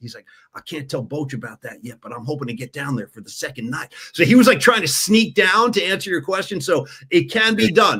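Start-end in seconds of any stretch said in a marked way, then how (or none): 0.5-3.9 speaking in hushed tones. Retelling what he was told in the clubhouse about the shows, in hushed tones. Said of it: "he was like speaking in hushed tones".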